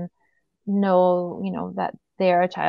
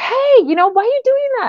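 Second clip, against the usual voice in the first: shrill, very high-pitched, loud shout; 8 dB louder than usual. Retelling how the siblings scolded one of the kids: imitating siblings shouting. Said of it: "shouting at the other one".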